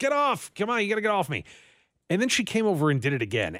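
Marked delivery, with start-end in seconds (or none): 0.0-1.4 play-acted sudden pitched-up half-yell. Retelling pushing a jumping puppy off the couch: imitating own yelling. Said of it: "I kinda yelled at her".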